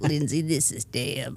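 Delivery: slow, heavy smoker's drawl, words drawn out. Doing a character voice of a heavy smoker who leaves voice memos: Deb voice. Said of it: "Be like".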